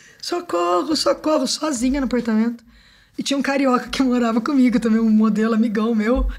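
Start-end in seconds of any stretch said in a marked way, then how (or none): 0.2-1.5 play-acted high screaming through tears. Speaker retells sitting alone behind a door with a knife, retelling screaming and crying for help. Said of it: "fiquei gritando, chorando".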